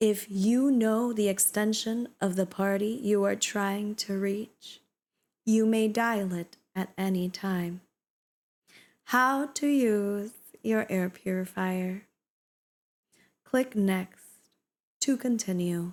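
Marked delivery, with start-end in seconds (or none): 9.0-15.9 playful flirty tone. Trying out voices while reading text aloud, in a flirty voice. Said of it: "That's my flirty voice".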